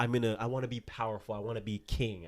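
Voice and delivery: ordinary delivery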